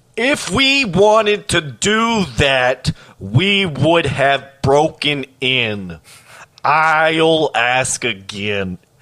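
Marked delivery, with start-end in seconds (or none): 0.2-6.0 commanding and hostile, higher pitch. A narrator voices one of the people at the door, commanding and hostile. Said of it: "she became commanding and hostile".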